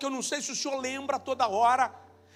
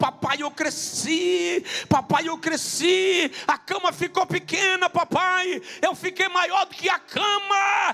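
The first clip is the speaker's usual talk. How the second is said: put-on eager small child's voice, "cama" drawn out; 4 semitones higher than usual. Retelling a story of a child waking at night: imitating a child shouting. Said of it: "acordou de madrugada gritando".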